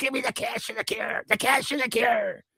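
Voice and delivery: very high, tiny, squeaky little-guy voice. Acting out what the little guy says when asked to speak: voicing a little guy. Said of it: "the little guy goes".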